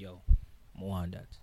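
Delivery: ordinary talk, nothing marked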